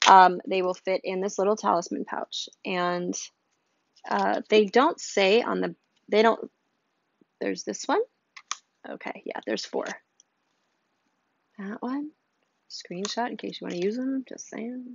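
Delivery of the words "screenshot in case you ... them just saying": soft, cheeky, conspiratorial aside. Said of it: "Did I say that out loud?".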